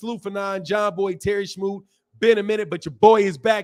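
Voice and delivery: ordinary talk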